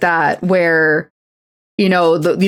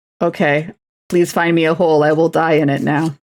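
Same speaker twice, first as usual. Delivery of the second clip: normal talking voice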